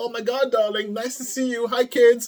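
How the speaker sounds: acted, forced bright, high, falsely cheerful voice. Acting out the judge greeting her husband and kids: imitating a pretend-cheerful greeting. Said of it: "Come home to her husband and pretend like".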